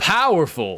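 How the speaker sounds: mock announcer shouting. Retelling what a game's announcer shouted on a gem pickup: imitating an announcer shouting. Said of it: "the announcer would shout things out".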